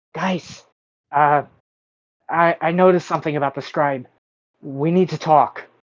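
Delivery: whisper-yell. A player's character knocks on the door and calls to the guys: whisper-yell. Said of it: "knock on the door and whisper, yell".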